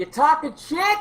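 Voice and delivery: very loud, high, shrill scream. Confronting strangers in a tavern in character: screaming very loudly. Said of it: "I'm gonna scream out very loudly".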